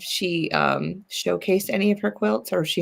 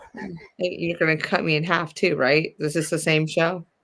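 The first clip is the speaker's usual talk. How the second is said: ordinary talk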